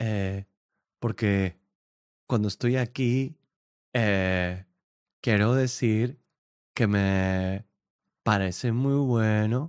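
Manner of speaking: mock slow, halting delivery stretched out with long pauses. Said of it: "no habla así".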